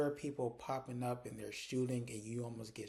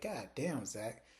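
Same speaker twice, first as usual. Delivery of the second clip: normal talking voice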